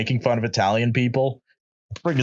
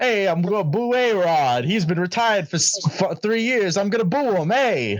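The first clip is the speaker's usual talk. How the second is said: put-on New York sports-fan accent, pitched up; 8 semitones higher than usual. Joking around with the group, going full New York: put-on New York accent. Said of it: "should we go full New York and just use the accent now?".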